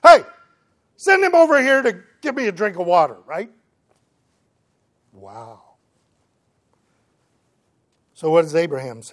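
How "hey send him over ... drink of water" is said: high, loud, fast, arrogant demanding tone. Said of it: "The arrogance of this guy".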